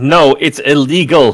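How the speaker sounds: high in-character shout. Voicing a character who warns the others they must leave: shouting in character. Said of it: "he shouts out".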